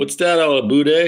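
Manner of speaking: thick Canadian accent, boot pronounced as bude. Demonstrating how Canadians sound, thick Canadian accent. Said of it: "A Canadian accent is like".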